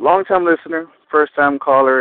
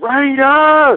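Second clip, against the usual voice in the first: high, loud scream at full lung. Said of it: "screaming at the top of my lungs".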